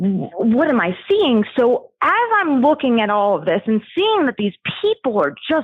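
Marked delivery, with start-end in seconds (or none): none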